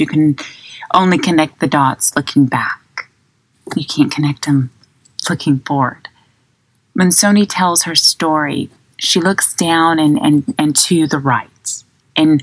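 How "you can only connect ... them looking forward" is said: usual speaking voice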